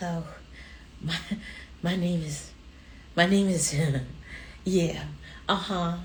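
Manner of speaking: meek, soft, timid little voice, stumbling over words. Speaker recalls early radio interviews, imitating own timid radio voice. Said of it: "I would talk like this".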